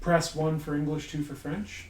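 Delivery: normal talking voice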